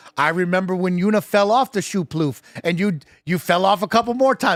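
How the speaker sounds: normal talking voice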